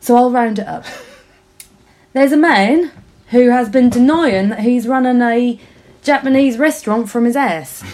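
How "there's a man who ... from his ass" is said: failed Norfolk accent sliding into cockney. Rounding up a long story, the speaker tells it in a bad Norfolk accent. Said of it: "I don't know what's happened to my Norfolk accent".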